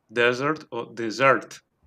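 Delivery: "dessert" stressed DES first, then SERT, slowly. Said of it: "acentuar en la primera sílaba o en la última".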